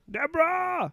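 called out way up high. Doing an impression to wrap up the segment: Ray Romano impression. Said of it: "That's my Ray Romano".

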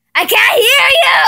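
full, high-pitched yelling scream. Talking through cups to a friend who can't hear: screaming. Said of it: "Why did you have to scream?".

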